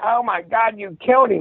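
mock high-pitched girl screaming. Retelling a crash scene, imitating a girl screaming. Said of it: "the girl was screaming".

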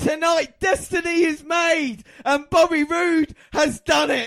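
high, loud, slowed-down, emotional ecstatic shout. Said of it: "so much emotion in my voice".

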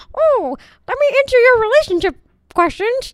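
squeaky, high, loud voice. Joking about Disney podcasts, the speaker does a terrible Mickey Mouse impression. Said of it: "That was a terrible Mickey Mouse impression".

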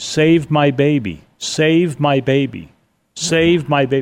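very slow, high, drawn-out calling out. Telling how EMTs reached a car down an embankment, retelling a woman's yell. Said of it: "they could hear a woman yelling".

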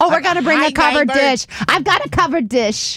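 put-on Wisconsin accent. On a podcast, a host imitates people who talk with a Wisconsin accent. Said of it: "sort of a Wisconsin accent".

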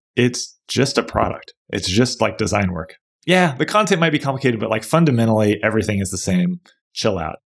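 plain

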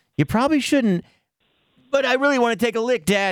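high, fast, pleading dog voice.

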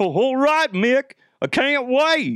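dopey, bumbling cartoon dog voice. A speaker acts out a cartoon exchange, answering Mickey, Goofy impression. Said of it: "I am not good at Mickey Mouse".

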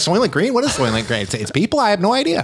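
baffled, totally lost tone, swooping sing-song. Imitating a clueless person who hasn't seen the movie, sounding like the other speaker. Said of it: "I don't know why he sounds like you".

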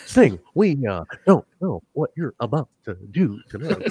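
amped-up, jittery, halting, over-dramatic delivery. Doing a Vampiro impression: sounds like William Shatner on meth. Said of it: "Sound like William Shatner on meth".

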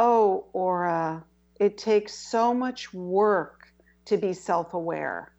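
slow, mock fed-up, exasperated tone. Quoting what an interviewer once said to the speaker, imitating an exasperated voice. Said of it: "she said in an exasperated voice to me".

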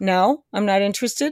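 plain

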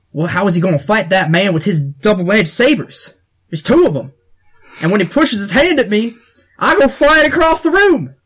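put-on Louisiana dialect. A player describes how their Wookiee will fight, in a Louisiana trapper accent. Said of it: "Louisiana trappers".

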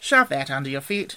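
plain reading voice

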